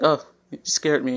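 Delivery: plain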